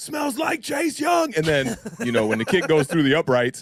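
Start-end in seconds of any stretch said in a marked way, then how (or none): 0.0-1.3 acted-out very high, shrill, high-pitched scream. Recounting shouting at an opposing fan after an interception, retelling a scream. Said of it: "I'm screaming at him".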